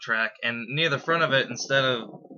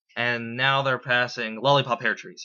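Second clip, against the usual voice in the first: normal talking voice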